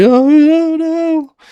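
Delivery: crying, voice pitched way up. Retelling being hit as a child, imitating own past crying. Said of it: "and I'm, like, crying. I'm like".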